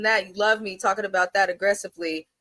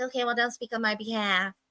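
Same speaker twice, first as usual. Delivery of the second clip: soft, nicest, sickly sweet, passive-aggressive little voice; 2 semitones higher, 7 dB quieter than usual. Retelling her reply during a disagreement over the schedule, mocking her sweetest voice. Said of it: "in the nicest little sweetest voice".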